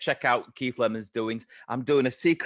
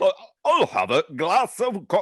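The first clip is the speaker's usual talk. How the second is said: put-on sing-song child voice, half posh, half northern accent; 8 semitones higher, 4 dB louder than usual. Show how your kids speak when asking for something, in a slightly posh, slightly northern accent. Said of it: "That's how my kids speak. Slightly posh, but slightly northern".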